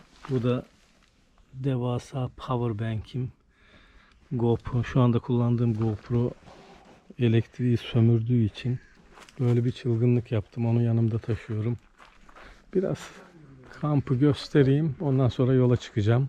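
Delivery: held-back, low-key, restrained speaking. Filming at a camping beach early in the morning, speaking in a hushed voice. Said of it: "Biraz kısık sesle konuşuyorum".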